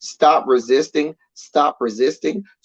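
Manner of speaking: put-on yell, drawn out and held back, mild. Imitating police on someone lying on the ground: imitating police yelling. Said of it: "they start yelling".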